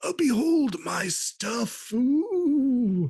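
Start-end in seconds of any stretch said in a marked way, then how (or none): 0.0-1.9 put-on drowsy, pitched-up, sleepy elderly man voice. Voicing an old sleepy shopkeeper greeting adventurers: sleepy old man voice. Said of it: "an old sleepy guy".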